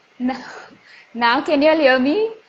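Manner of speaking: shouting, very loud. Told they weren't audible, the speaker checks if everyone can hear: shouting. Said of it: "I'm actually shouting over here".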